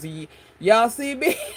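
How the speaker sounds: very slow, stumbling drawl, dragged out. Retelling how someone talked in a Madea voice about a clip. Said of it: "all I heard was Madea's".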